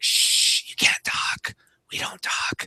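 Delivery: slow, hushed, drawn-out whispered shushing. Retelling a dad shushing his kids in a theater: imitating a whispering dad.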